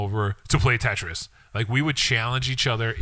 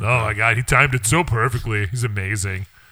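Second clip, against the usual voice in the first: raised, a bit loud, sarcastic college-student tone; 5 dB louder than usual. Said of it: "Why do you sound like everybody that goes to Columbia right now?".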